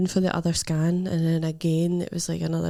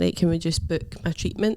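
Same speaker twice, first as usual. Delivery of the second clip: ordinary talk, nothing marked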